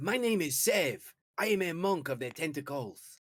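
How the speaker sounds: formal, ceremonious delivery, closely imitated. In a game, a monk character introduces himself, imitating the other monks' formal greeting. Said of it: "He's imitating them as well as he can".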